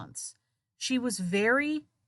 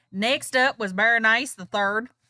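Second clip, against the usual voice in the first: put-on Southern US accent, loud; 6 dB louder than usual. Introducing the next person in the story, in a southern accent. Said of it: "I'm gonna bring out my southern accent for this one".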